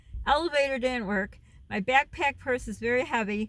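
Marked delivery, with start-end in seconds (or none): 0.2-1.3 elevator stressed, pushed a bit louder.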